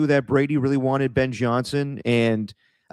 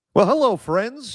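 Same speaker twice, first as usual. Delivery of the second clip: put-on very high, cheesy old-school announcer voice; 9 semitones higher than usual. Describing how Tim sounds whenever he hops on, doing Tim's old school announcer voice. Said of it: "that old school announcer voice".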